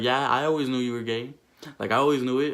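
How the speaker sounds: ordinary delivery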